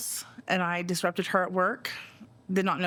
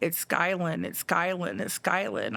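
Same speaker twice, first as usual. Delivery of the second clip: ordinary talk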